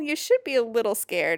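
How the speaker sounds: ordinary delivery, nothing marked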